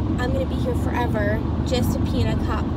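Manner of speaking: ordinary delivery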